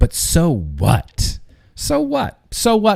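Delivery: smug, smarmy, drawn-out sing-song delivery. Mimicking how he said it in such a smarmy way, mock-smarmy 'so what'. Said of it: "He said it in such a smarmy fucking way".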